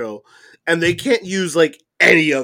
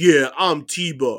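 mocking put-on wannabe tough-kid voice. Joking about the name T Bar, mocking a wannabe tough kid. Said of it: "that kid in All junior high school who thinks he's tough. He's like".

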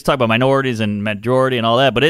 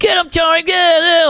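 put-on mocking voice, pitched very high; 4 dB louder than usual.

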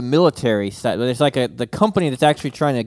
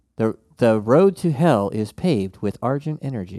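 robotic voice, slower. Describing the robot voice that comes over, then imitating it: robot voice. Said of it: "the robot voice".

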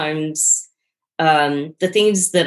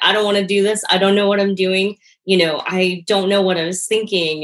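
put-on crying voice; 2 semitones higher than usual. Recounting the first day of teaching, on the phone with mom, retelling own crying. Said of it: "on the phone with my mom crying".

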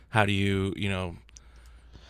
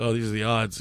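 plain

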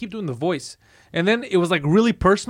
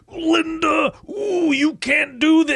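very high, very slow, stretched-out drawl; 10 semitones higher than usual. Retelling how people backstage quoted the wrestler, doing the Hulk Hogan voice. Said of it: "they would do the voice".

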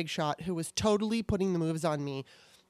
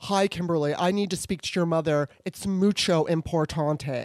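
big, forceful, strong, booming delivery; 5 dB louder than usual. Retelling a woman's phone call from the 80s, imitating a strong voice. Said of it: "she's got this strong ass voice".

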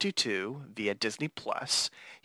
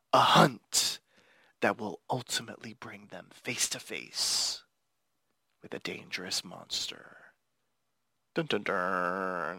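spooky, dramatic horror-style narration, lower pitch; 5 semitones lower than usual. Reading an official episode synopsis aloud: dramatic horror-infused reading. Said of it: "I tried to make it as dramatic and as horror infused as possible".

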